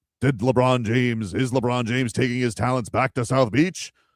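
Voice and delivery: put-on radio announcer voice. Discussing stations wanting to sound up to date, the speaker demos a radio announcer voice. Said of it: "your radio voice guy do radio voice things".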